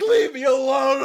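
put-on furious, raging screamed outburst. Describing a movie scene, imitating Bruce screaming. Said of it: "just starts screaming, like".

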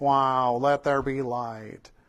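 deadpan, low, flat, slow monotone. Contrasting a plain version of God speaking creation, in a flat monotone. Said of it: "not just like the monotone".

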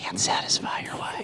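hushed whisper. Showing how the phrase has to be said, whispering. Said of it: "you have to whisper it when you say it".

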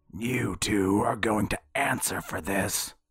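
rough, gravel-voiced tone. Reading a story, a character suddenly speaks up to two others: gravelly voice. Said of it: "came a gravelly voice".

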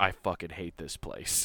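mock under-breath mutter. Recounting a baseball player's interview remark, retelling a mutter under his breath. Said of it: "under his breath".

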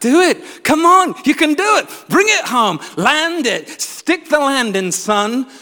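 put-on loud, excited, hyped-up American accent. Retelling people urging Jesus on, in a mock-excited American accent. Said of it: "they had American accents".

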